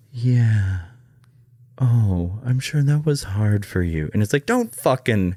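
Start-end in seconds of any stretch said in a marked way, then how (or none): 0.2-4.1 put-on slow, gentle, caring therapist voice. Mocking how some therapists sound while listening: imitating a soft therapist voice. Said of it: "the therapist voice".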